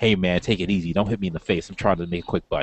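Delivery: put-on whisper. Retelling a comic scene where Taskmaster whispers: imitating Taskmaster whispering. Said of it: "you hear Taskmaster kind of whisper to him".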